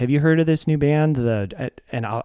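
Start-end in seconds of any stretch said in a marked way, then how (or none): none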